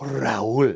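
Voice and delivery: name drawn out with fiery Spanish pronunciation. Showing how a Spanish name must be said: name said with Spanish flair. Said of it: "it's called putting the fuego on it".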